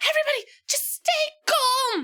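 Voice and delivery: small, plucky, brave, very high-pitched little voice. Player describes Ryan swooping in during the game, in Ryan's brave little voice. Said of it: "using his brave little voice".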